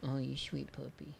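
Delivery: quiet coo under the breath. Showing how to make a local ad, talking to a puppy in dog baby voice. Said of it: "That's my dog baby voice".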